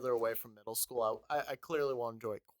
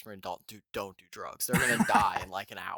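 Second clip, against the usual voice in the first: loud, projected stage whisper; 5 semitones lower, 5 dB louder than usual. Retelling what was said while the others were high: imitating own past half-whisper. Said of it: "I was just whispering".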